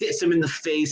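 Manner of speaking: usual speaking voice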